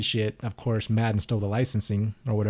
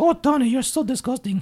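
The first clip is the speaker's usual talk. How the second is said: terrible put-on Italian accent, very high, shrill; 5 dB louder than usual. Asked if his aunt had an accent, imitating her: bad accent imitating his aunt. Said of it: "That was the worst accent in the world".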